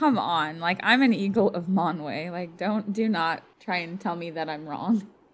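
cheeky, sassy tone. Retelling a character's retort to a king: imitating a sassy retort. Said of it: "so sassy".

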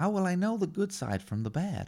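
high-pitched American man, movie-hero delivery. Acting out the scene where Yoda trains Luke: Luke Skywalker voice. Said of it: "High-pitched American man".

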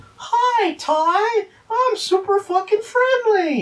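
very high, very slow, syrupy sweet voice. Retelling how the guy in the dub would come in: imitating a nice, sweet voice. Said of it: "just have this nice, sweet voice".

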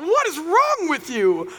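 slow, put-on baffled baby voice.

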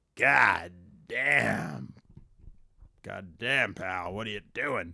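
slow, drawn-out put-on voice, every word stretched. Doing a requested impression of Vince for the audience: Vince impression. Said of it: "So Vince is like".

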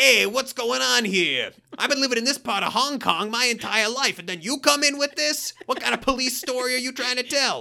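squeaky, very high action-film bad guy voice. Speaker mimics the bad guys in Jackie Chan movies, Jackie Chan movie bad guy voice. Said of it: "the bad guys in all the Jackie Chan movies are saying like".

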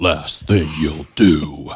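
very low, deep, sonorous superhero voice. Quoting someone's line the way he delivered it: booming, sonorous Batman voice. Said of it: "In his booming, sonorous Batman voice".

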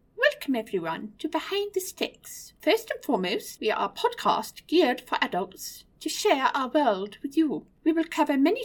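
high, posh royal voice. Podcast intro done as an ode in her voice: Queen Elizabeth impression. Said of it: "I will attempt to do our intro dialogue in her voice".

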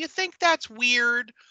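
creepy, faux-innocent, unsettling little voice. Retelling how a boy asks Sandra a question: imitating a creepy innocent voice. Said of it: "he gets creepy voice 'cause he's like, he's all innocent".

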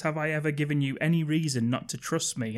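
ordinary delivery

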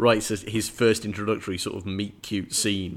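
ordinary delivery

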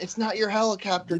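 mock crowd-style yelling, pitched high. Retelling flying Charlie's helicopter, retelling the crowd yelling. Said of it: "Everybody's yelling".

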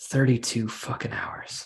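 put-on mutter under the breath. Quoting a woman whenever a coworker throws a temper tantrum: mimicking a mutter under her breath. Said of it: "I'll hear her mutter under her breath".

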